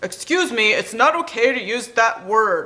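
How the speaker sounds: made-up put-on voice for a toy. Showing the voice used for a toy authority figure: voice for a different toy. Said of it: "That kind of, that kind of voice".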